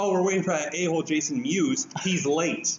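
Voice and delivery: quick, sarcastic delivery right off the bat. Retelling his reply to a man who came up behind him: retelling a sarcastic quip. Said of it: "And I'm a sarcastic guy".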